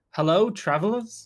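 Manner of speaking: calling out loudly. Player's character arrives and calls out to travelers, raised voice. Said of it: "raise my voice and be like".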